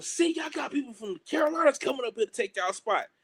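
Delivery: high-pitched yell hollered after someone. Retelling someone at a tryout yelling as they walk away: imitating someone yelling. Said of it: "we hear him yelling".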